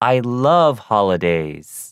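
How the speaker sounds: love and holidays stressed, said slowly.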